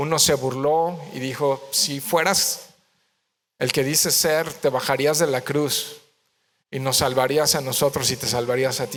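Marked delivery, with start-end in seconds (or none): none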